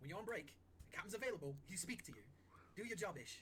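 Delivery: shouted sailor scolding.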